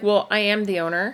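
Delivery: normal talking voice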